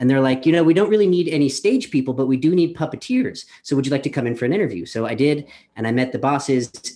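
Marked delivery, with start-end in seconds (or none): none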